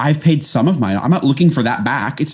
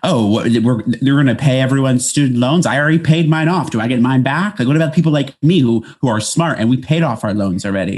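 ordinary talk, nothing marked

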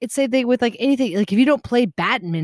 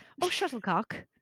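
breathy, whispered fake British accent; 3 semitones higher, 12 dB quieter than usual. Joking that the word can't be said without one: put-on british accent. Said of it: "You literally can't say it without an accent".

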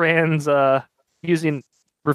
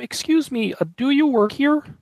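put-on puppet voice, much higher pitch; 9 semitones higher than usual. Playing an odd-looking man in a made-up scenario, Kermit the Frog voice. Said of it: "You did the Kermit voice".

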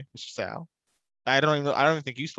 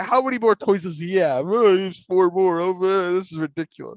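put-on talking like a small child, little-kid voice; 6 semitones higher, 4 dB louder than usual. Mocking the other speaker for sounding like a little kid, imitating a little kid. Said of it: "You sound like a little kid. Like".

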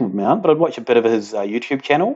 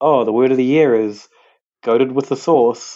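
usual speaking voice

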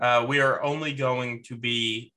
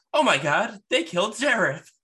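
high-pitched cartoon outcry swinging wildly in pitch; 9 semitones higher, 3 dB louder than usual. Joking about a player being beaten, quoting South Park: South Park voice. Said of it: "It'll be like South Park".

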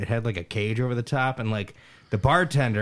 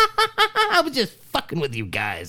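acted very high, shrill, swooping cackling laugh-talk; 3 dB louder than usual. Retelling what she said at the car after her prank, imitating maniacal laughter. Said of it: "she starts laughing like a maniacal maniac".

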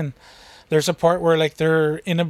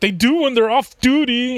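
play-acted irritated, put-out, pissed-off tone, pitched up; 8 semitones higher, 4 dB louder than usual. Quoting a movie character's reply about mimes: imitating a pissed-off reply. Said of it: "he gets all pissed off".

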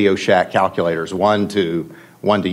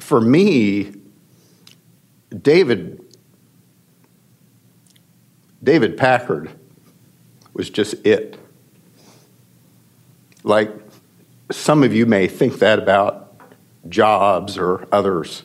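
getting emotional, choked up. Recalling meeting a personal hero, getting emotional. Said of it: "I get emotional about this stuff".

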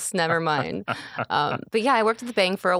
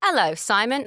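put-on English accent; 4 semitones higher than usual. Retelling running into a friend and greeting him: put-on english accent. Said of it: "she adopts an English accent".

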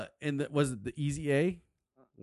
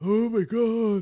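deep, hoarse put-on female voice, louder; 10 semitones higher, 7 dB louder than usual. Imitating how an actress talks: Emma Stone impression, deep hoarse. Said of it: "Demi Moore type of deep, you know, hoarse voice".

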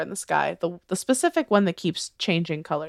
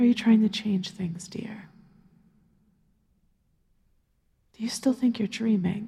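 intimate, close stage whisper; 4 semitones higher than usual. The narrator voices a woman leaning close in a dream, whispering in the listener's ear. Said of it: "she whispers in your ear".

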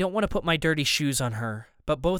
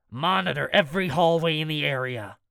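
usual speaking voice

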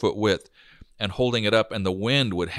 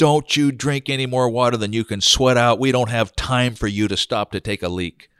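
loud, top-of-the-lungs bellowing yell; 3 semitones higher, 5 dB louder than usual. Recalling a construction job, imitating Dennis Bunker screaming at the top of his lungs. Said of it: "would scream at the top of his lungs".

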